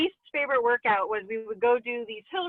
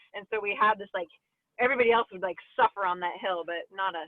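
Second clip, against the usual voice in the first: ordinary talk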